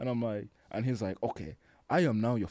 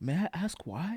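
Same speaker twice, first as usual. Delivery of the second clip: pitched-up, concerned voice; 8 semitones higher than usual. Retelling how the doctor leaned in and asked, imitating a concerned doctor. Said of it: "looks like real concern".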